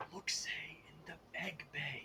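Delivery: whispering. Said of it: "I find it more fun to actually whisper".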